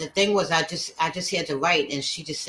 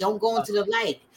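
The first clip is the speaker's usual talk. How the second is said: put-on scream, higher pitch; 5 semitones higher than usual. Retelling a daughter's words in a near-death vision: imitating a scream. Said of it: "my daughter was screaming".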